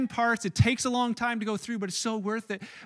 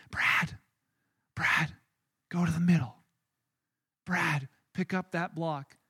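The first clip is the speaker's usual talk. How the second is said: hushed, low half-whisper; 5 semitones lower, 3 dB quieter than usual. Retelling how she walked around the circle guiding Brad: half-whispering. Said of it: "she just whispers to him".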